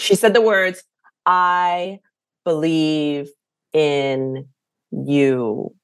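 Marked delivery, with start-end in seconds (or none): 1.2-5.6 very soft, robotic, mechanical delivery. Quoting a woman who doesn't speak English, very soft and robotic. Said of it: "in this very soft, robotic".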